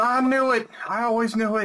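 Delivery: shouting. Voicing a neighbor who runs outside toward a UFO: yelling. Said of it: "He's yelling".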